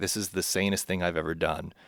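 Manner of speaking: usual speaking voice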